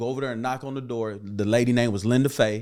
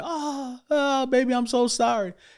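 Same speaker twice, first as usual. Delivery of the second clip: acted, very high, slow, drawn-out sobbing; 13 semitones higher than usual. Retelling how a mother apologized at a hospital bedside: imitating mother crying. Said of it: "and she's crying".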